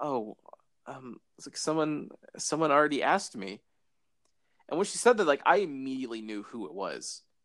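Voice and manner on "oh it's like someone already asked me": put-on timid tone, slower. Retelling how she answered the question, imitating her timid reply. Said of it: "she just kind of like timidly said".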